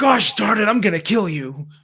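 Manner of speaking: put-on, corny, high and loud mad voice. Mocking a corny threat from someone mad: imitating someone mad. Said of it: "when someone's mad at you and they're like".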